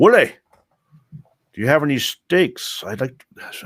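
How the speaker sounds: put-on Scottish accent. Voicing Helga asking the innkeeper for steaks: Scottish accent. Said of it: "how did I turn Scottish all of a sudden?".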